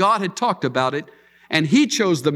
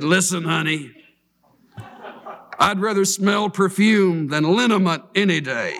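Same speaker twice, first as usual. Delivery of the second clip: put-on rough, gravelly voice. Retelling a man's reply to a woman who scolded him, gravelly voice. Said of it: "in his gravel voice".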